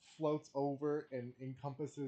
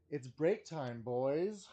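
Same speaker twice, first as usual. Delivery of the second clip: loud call, projected to fill a room; 2 semitones higher, 6 dB louder than usual. Voicing a character calling to everyone in the chamber: loud enough for the chamber. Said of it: "in a loud enough voice so that everyone in the chamber can hear me".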